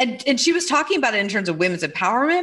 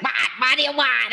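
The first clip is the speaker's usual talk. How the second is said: put-on, laid-on, irritated, angry New York accent; 2 semitones higher than usual. Joking with a friend about whose has which voice, speaker does a put-on angry New Yorker accent. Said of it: "it gets like this like angry New Yorker".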